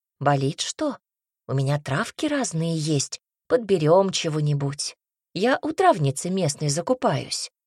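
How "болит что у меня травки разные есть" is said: ordinary delivery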